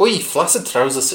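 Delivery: fumbled, half-landed attempt at an Irish accent. Acting a character in a scene with the Commissioner: attempted Irish accent. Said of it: "I was trying to do it in Irish".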